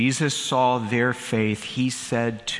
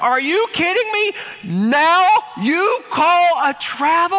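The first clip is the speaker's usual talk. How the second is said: mock furious shout, higher and louder; 7 dB louder than usual. Retelling shouting at a referee over a travel call: retelling a yell at a referee. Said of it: "I yell at the top of my voice".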